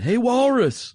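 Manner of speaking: loud, high-pitched calling out.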